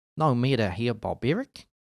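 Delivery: put-on New Zealand accent. Reading a line aloud, trying it in a new zealand accent. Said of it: "that's New Zealand, I think".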